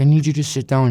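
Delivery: tearful, frantic, urgent crying. Retelling a phone call from the speaker's mom, imitating frantic crying. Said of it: "She's fucking crying, frantic".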